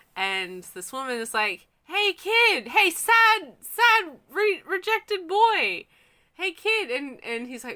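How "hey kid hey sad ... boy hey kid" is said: very high, very loud, drawn-out calling yell. Retelling a woman calling to a rejected boy from her balcony, imitating her yelling. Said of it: "She's yelling from the balcony".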